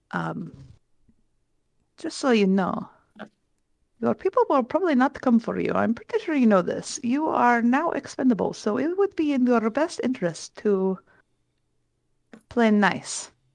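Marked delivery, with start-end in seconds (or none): 1.9-13.2 quiet, hushed stage half-whisper. Threatening a captive in character, leaning in: half-whispering. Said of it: "whisper to her".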